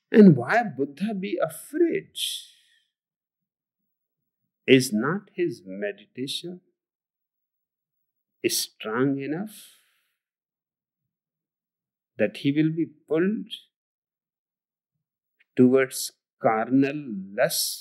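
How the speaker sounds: very slow, deliberate, drawn-out cadence. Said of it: "He talks so slowly".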